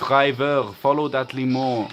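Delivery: slow, put-on French accent. Quoting a favorite video game voice line from a limo driver mission, French accent. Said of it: "with like a French accent".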